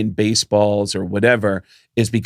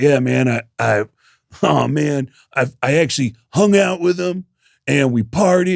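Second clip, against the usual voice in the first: mock drunk voice, slow and rambling; 4 semitones higher than usual. Comedian retelling a man who approached him after his set, imitating drunk Roger. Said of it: "this guy's hammered".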